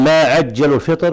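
plain

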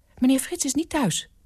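anxious, fearful voice. A woman answers a man's phone call, sounding frightened. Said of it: "Het klonk angstig".

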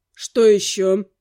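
annoyed, irritated, very deep voice. The professor answers another objection from the narrator; irritated. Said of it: "раздраженно уточнил он".

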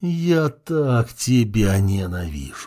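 groaning voice. A narrator reads a character's line, groaning. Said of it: "простонал блондин".

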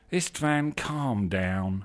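slow, lazy, stretched-out, unhurried drawl. A twin looks up from his book to answer his brother's exclamation, drawling. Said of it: "he drawled".

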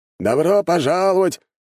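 very high friendly voice. The old man behind a makeshift counter greets the arriving narrator: friendly welcoming greeting. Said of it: "раздался приветливый голос старика".

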